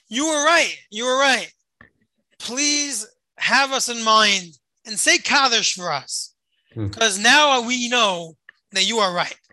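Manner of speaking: imitated shouting, called out only mildly. Retelling a friend's words called out through the gas: imitating someone shouting. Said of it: "shouts out at me through the gas".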